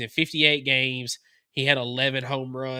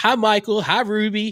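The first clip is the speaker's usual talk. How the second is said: drawn-out, raised, slow yell, pitched up; 8 semitones higher, 7 dB louder than usual. Retelling what mom yells at the phone during the podcast: imitating someone yelling. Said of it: "she's yelling at the phone".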